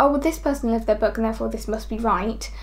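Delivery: ordinary talk, nothing marked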